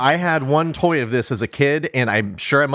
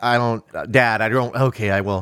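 mock unwilling flat voice, lower; 3 semitones lower than usual. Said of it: "It's very flat".

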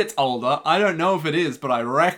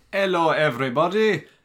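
put-on Italian accent. Greeting viewers at the start of the episode: fake Italian accent. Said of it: "why I'm speaking with an Italian accent".

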